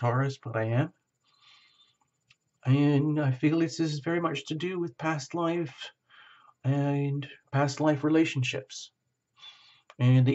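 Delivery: a little choked with emotion. Addressing Taurus in a reading, choking up. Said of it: "I'm all choking up here a little bit".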